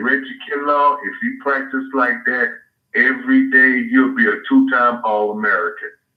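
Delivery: plain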